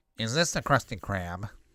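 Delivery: put-on cartoon character voice. Retelling how a son quotes a cartoon: Squidward voice. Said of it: "the Squidward voice".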